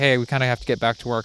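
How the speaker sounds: ordinary delivery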